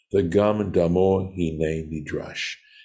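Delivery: ordinary talk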